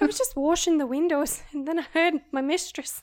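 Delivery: put-on Irish accent. Playing someone washing windows who hears their mistress, in a put-on Irish accent. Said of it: "I'm so sorry to all Irish people".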